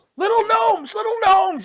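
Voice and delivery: shrill, very high shouted yelling. A game narrator voices a man running up the stairs: yelling. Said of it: "You hear him yelling".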